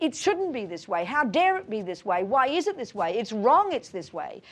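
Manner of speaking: mock indignant, angry put-on voice. Acting out the inner voice that rejects how things are: imitating an angry voice. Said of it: "The angry voice says".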